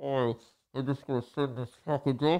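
imitated muffled speech. Showing how he sounded through a filtered mask while sending a package, imitating muffled mask voice. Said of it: "So I sound like this".

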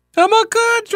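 voice going up octaves. Retelling a date's reply to being asked about Pfizer, imitating a high voice. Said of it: "I can't even get that high".

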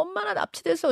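high-pitched, tearful crying voice.

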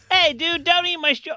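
very high, squeaky cartoon character voice. Attempting an old impression that used to be good: old Simpsons impression. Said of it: "I'm getting it messed up".

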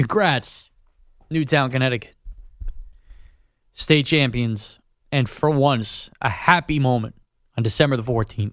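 emotional, low, choked-up voice catching. Radio host congratulates a town's state champions on air; choked up. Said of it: "I'm getting choked up".

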